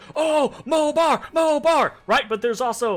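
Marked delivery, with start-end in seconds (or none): 0.1-1.9 thrilled, high, drawn-out chittering creature chatter. Voicing the werebats watching a fight: excited werebat crowd. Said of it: "there's excitement".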